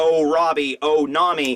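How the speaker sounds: plain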